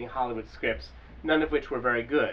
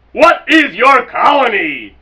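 very high, very loud, very slow booming bellow; 9 semitones higher, 17 dB louder than usual. Narrator reading a story, the interviewer questions a man again: bellowing. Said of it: "The interviewer bellowed".

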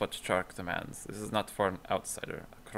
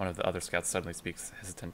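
ordinary talk

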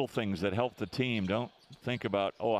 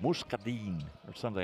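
poor attempt at French accent, weak French pronunciation; 4 dB quieter than usual. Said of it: "That was your version of French?".

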